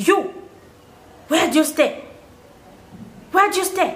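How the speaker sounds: very aggressive, high-pitched, acted out. Retelling a man who approached the speaker and sister, retelling his aggressive demand. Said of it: "said in a very aggressive voice".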